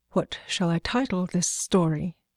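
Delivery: ordinary delivery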